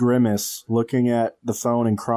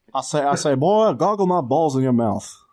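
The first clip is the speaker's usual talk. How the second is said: blustery rooster-like voice with a southern twang; 4 semitones higher than usual. Riffing with another speaker on a dentist bit: Foghorn Leghorn impression. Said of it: "That's a deleted scene from Foghorn Leghorn".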